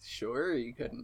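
low, mocking, disbelieving sarcastic jab. Replying to a claim about taking a poem's line seriously: sarcastic. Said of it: "now that sounded sarcastic".

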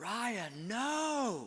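put-on high child's yell with the no drawn out long. A parent retells their son yelling at his baby sister: retelling a son's yell. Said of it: "one of my sons yells out".

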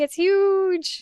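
mock high excited yell, huge drawn out. Recalling a favorite moment of characters running through rooms: imitating characters yelling. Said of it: "Them just yelling".

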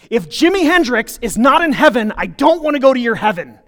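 acted, heated, loud, angry screaming outburst. Retelling what she screamed over her shoulder while storming out, imitating someone screaming. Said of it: "stormed out of the room screaming at me".

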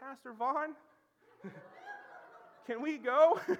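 put-on little squeaky teen voice, high and swooping. Retelling how a high schooler called out to him, imitate the little squeaky high-schooler voice. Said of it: "I hear this little squeaky high school voice like".

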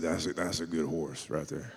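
scratchy, raspy delivery. Retelling words a rescued rider said about his horse: imitating a scratchy voice. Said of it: "He's a scratchy voice".

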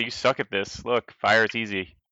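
ordinary talk

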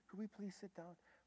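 soft, gentle delivery. Speaker retells asking screaming people to sit down, reenacting a gentle tone. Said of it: "Just that tone".

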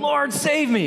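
acted, high, desperate yell. Retelling a falling man crying out to the Lord: imitating a desperate yell. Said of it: "he yells out".

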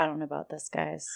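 hushed, wary, really low half-whisper. Describing how she reacts to the group, acting out her words: retelling a low half-whisper. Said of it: "just kind of like in a really low whisper".

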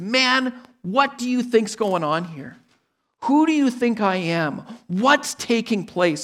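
put-on exasperated, frustrated anger, pointed. Explaining a Gospel passage, voicing Jesus's questions; imitating a frustrated Jesus. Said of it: "And he's frustrated".

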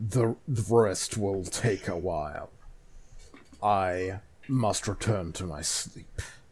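deep giant eastern dragon voice. Game master voicing the dragon Shenron as it departs, Shenron dragon voice. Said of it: "and bursting out of the energy from them is a gigantic sky covering Eastern Dragon, / and bursting out of the energy from them is a gigantic sky covering Eastern Dragon, coiling up on itself and cover".

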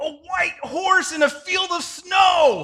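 very high, very loud delighted scream. During a drive, retelling a companion's sudden outburst, a mock delighted scream. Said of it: "Jeff screams with sheer delight".

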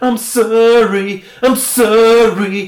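put-on very loud, slow, drawn-out boy-band style pleading. Retelling how men react after being told off: imitating a nineties boy band apology. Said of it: "a nineties boy band".

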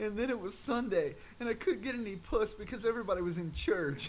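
play-acted crying, high-pitched blubbering sob-talk. Retelling the best line of a movie, imitating a character crying. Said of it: "he starts crying like something horrible happened".

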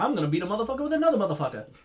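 rapid-fire, run-together, loud and high delivery. Quoting a game character's imagined line, said very fast. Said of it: "You said it so fast".

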